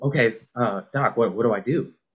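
ordinary talk

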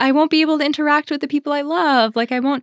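high, anxious, fearful, worried voice. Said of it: "there was that fear in me".

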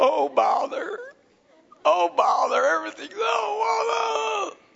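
gloomy, creaky groan, awful and drawn out. Describing their first reaction to hard trials, doing a mock-gloomy Eeyore voice. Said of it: "I walk around like Eeyore".

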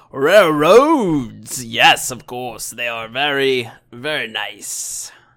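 slow, booming big beast bellow. Voicing a creature who bellows whenever railroads are mentioned, bellowing creature voice. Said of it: "he just bellows".

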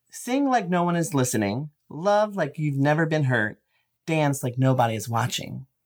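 ordinary talk, nothing marked

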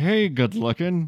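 acted, forced speech through gritted, clenched teeth. Acting out a man's reverse-psychology line to a woman, through gritted teeth. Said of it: "Through gritted teeth is just".

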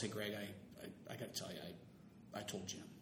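hushed, soft delivery. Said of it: "and Farrell goes".

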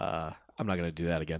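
ordinary talk

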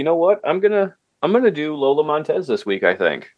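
high, wide-ranging, suddenly excited tone.

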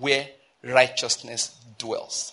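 very slow stress on where righteousness dwells, drawn out. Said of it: "I read that to emphasize the word or the phrase".

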